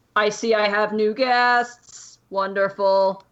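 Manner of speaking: slow, deliberate voice of a towering construct. Voicing the construct greeting new guests: construct's voice. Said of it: "slowly turns to the rest of you and he goes".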